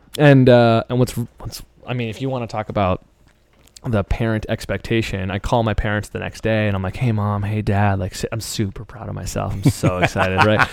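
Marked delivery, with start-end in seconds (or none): 7.0-10.5 put-on smug tone. Retelling calling parents with scholarship news: imitating own smug tone. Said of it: "so fucking smug".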